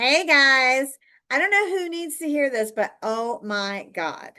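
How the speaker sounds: performative, try-hard, over-the-top, cringey delivery. Showing coaches a cringey performative intro. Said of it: "Cringe intro. Here we go".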